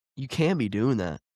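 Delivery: ordinary talk, nothing marked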